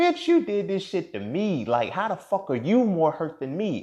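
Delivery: put-on, very high, loud, snapping-off furious outburst. Retelling what was said to a girlfriend in a fit of anger: retelling an angry outburst. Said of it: "snapped off and everything like that".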